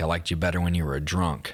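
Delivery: ordinary talk, nothing marked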